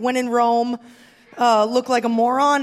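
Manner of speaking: ordinary talk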